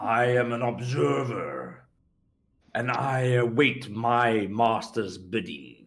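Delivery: deep, low voice. The game master voices an observer speaking inside a player's mind in a deep voice. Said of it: "You hear in a deep voice inside your mind".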